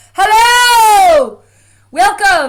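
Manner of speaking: very loud, very high, shrill swooping yell. Greeting the audience before a final session, shouting. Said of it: "I am shouting".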